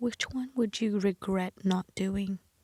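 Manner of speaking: hushed, soft half-whispered voice. Retelling what a nurse on the bus said, imitating a half-whisper. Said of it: "she just whispered to me".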